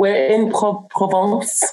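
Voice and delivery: showy put-on French accent pronouncing "Provence". Saying where the speakers are calling from: put-on French accent. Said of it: "in my nice French accent".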